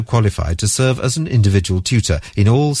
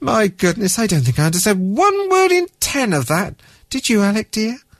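sheepish, embarrassed, very high voice; 11 semitones higher than usual. After an embarrassed little laugh, [name] speaks to Alec, embarrassed. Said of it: "gave an embarrassed little laugh".

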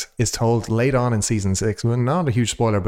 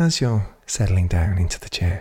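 put-on British mindfulness app voice, lower pitch; 4 semitones lower than usual. Doing an impression of the mindfulness app Headspace: Headspace narrator impression. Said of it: "my impression of, um, you know, the mindfulness, uh, apps".

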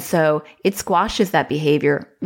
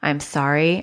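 mock-robotic, flat, unemotional voice. Describing how they answer someone's angry outburst: retelling in robotic, unemotional voice. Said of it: "I'm being robotic and unemotional".

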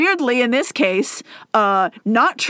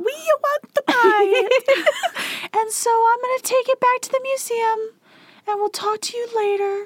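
tiny, magical, very high fairy voice; 12 semitones higher than usual. Acting out a man who wants to buy it for a museum: tiny fairy voice. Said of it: "Instead of sounding high and afraid".

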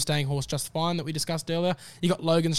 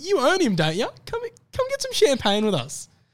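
high, loud, mock welcoming voice. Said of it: "the owners go".

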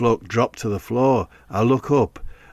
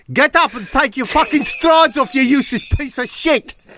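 very high, put-on South African accent; 4 dB louder than usual. Retelling what an attacker said while he was on his knees: south african accent. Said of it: "He was South African".

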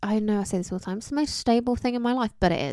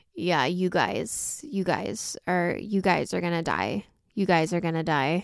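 croaky voice on every word; 4 semitones lower than usual. Trying to find what makes her voice: croaky Kim Kardashian impression. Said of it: "she's very croaky".

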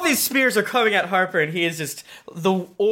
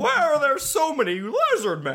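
terrible high voice swooping up and down; 7 semitones higher than usual. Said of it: "Are you being that man from Jimmy Stewart".

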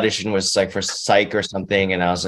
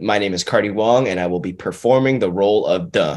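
ordinary talk

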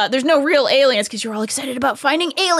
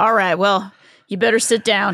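put-on cowboy trucker voice, lower; 5 semitones lower than usual. Retelling what the game character Leslie says: Leslie voice. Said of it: "a space cowboy trucker guy".

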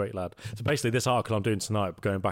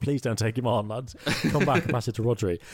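pleading voice; 3 semitones higher, 3 dB louder than usual. Retelling a coach begging a player to pass back: imitating Guardiola begging. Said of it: "begging him".

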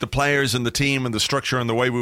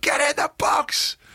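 put-on shout, much higher and slower. Recalling a guy in the crowd behind who kept shouting, retelling his shout. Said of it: "who just kept shouting".

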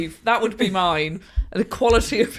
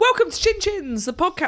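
very high voice, breaking and giving out; 10 semitones higher than usual. Podcast host opening the show as the voice cracks, voice cracking. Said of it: "my voice went. It ran away from me".

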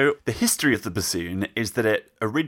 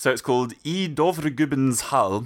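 bad attempted Norwegian accent, higher; 4 semitones higher than usual. Giving the original title of a piece of music: terrible norwegian accent. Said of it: "Forgive my terrible accent".

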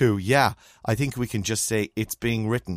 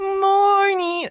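put-on poshest South Dublin accent, very high pitch; 4 dB louder than usual. Imitating how Kate greets people, saying morning in Kate's posh South Dublin voice. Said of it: "in the poshest South Dublin voice you've ever heard in your life".

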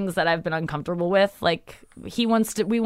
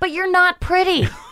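put-on old lady voice; 9 semitones higher than usual.

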